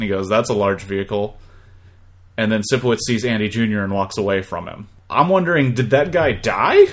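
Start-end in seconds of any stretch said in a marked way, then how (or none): 0.3-1.4 flat, deadpan monotone delivery. Recapping a scene, quoting a man's reply about the bus in a monotone.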